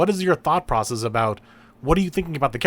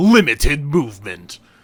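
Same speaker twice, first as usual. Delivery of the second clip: loud toy commercial announcer voice; 7 dB louder than usual. Explaining how they read a joke, in a toy commercial announcer voice. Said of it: "the announcer in a commer- like a toy commercial is like".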